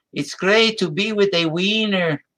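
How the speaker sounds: put-on high Spanish accent. Retelling a pitcher's hot dog commercial: Luis Tiant Spanish accent. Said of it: "with his Spanish accent".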